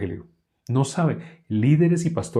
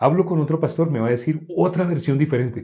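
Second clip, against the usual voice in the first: plain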